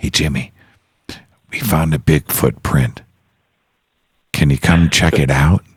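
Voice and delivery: secretive, confiding in-the-ear stage whisper. Retelling a story, the speaker repeats what a man whispered in his ear: retelling a whisper. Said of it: "he whispers in my ear".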